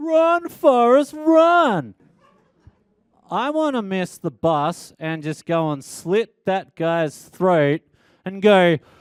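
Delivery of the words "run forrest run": very high, shrill, jeering yell, drawn out. Retelling a stranger at the bus stop: imitating someone yelling.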